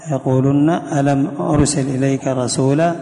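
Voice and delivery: ordinary talk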